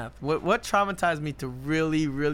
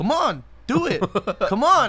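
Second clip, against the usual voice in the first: loud, drawn-out, impatient, exasperated, acted frustrated urging; 6 semitones higher, 7 dB louder than usual. Recalling how their dad taught without explaining the process, imitating frustrated urging. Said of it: "I think he was just so frustrated".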